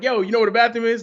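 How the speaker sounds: put-on brash, pushy, rude, high New York holler. Retelling asking someone at a booth where the bathroom is: imitating own rude New York shout. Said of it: "rudest New Yorker on planet Earth".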